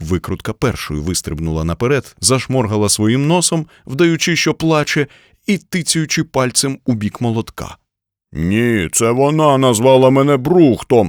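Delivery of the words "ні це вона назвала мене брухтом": loud, raised shout, yelling back. The hammer answers the screwdriver's complaint to their boss, shouting. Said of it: "закричав молоток".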